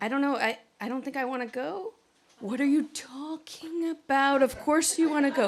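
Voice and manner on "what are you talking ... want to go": put-on pushy, overbearing mom voice. Acting out a mom talking to her child about prom: imitating a mom voice. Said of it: "do this for your mom voice".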